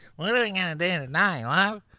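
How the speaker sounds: very high, very loud, shrill screeching call. Retelling what a woman said to her boyfriend, imitating a high screechy voice. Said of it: "It was higher and screechier".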